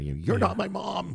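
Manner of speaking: put-on yelling. Retelling a film scene where a character yells at a girl: imitating someone yelling. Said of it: "yelling at her".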